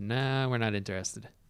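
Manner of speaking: ordinary talk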